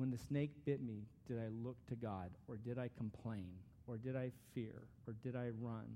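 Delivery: slow reading with long pauses. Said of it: "I'm gonna read them slowly".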